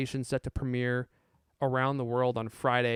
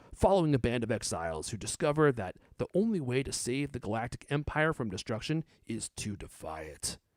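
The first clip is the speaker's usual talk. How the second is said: epic movie trailer announcer narration voice. Reading a movie trailer's description aloud, in a movie trailer guy voice. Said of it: "This is my uh, movie guy voice".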